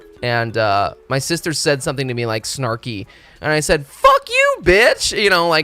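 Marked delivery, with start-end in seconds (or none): 3.8-5.2 shrill, playful, loud yell, very high. Retelling a joking insult thrown at the sister: retelling a joking insult. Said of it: "kinda like a joking way".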